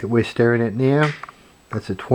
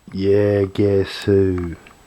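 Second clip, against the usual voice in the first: deliberately lowered, put-on deep voice; 3 semitones lower than usual. Trying out a new intro, the speaker says it in a deep voice. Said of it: "In a deep voice".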